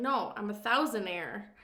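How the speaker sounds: ordinary talk, nothing marked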